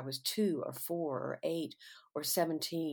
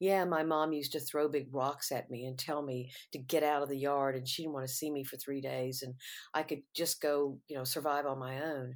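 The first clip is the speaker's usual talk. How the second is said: plain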